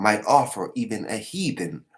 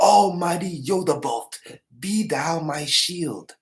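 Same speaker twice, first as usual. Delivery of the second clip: slow, high-pitched, drawn-out pleading cry; 7 semitones higher, 4 dB louder than usual. Retelling a battle scene, imitating Montefiore screaming. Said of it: "Montefiore screaming".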